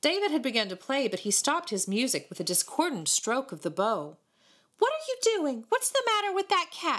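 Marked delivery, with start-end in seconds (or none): 4.8-7.0 insistent, demanding, pitched very high. David stops his music and questions someone: demanding. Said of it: "he demanded".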